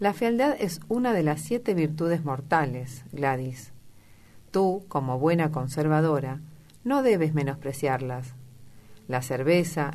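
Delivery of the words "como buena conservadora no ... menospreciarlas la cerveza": plain reading voice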